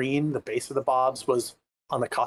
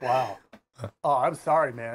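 put-on deadpan, flat voice. Retelling the reply after being thanked for inspiring: imitating Richard's deadpan. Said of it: "deadpan humor".

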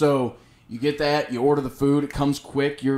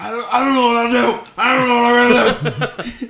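loud, high-pitched screamed babble, way up high; 10 semitones higher, 7 dB louder than usual. Retelling a friend's frantic phone call: imitating a friend screaming. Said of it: "He's screaming immediately as soon as I answer".

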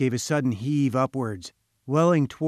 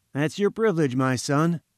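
ordinary delivery

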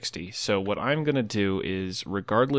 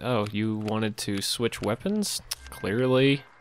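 ordinary talk

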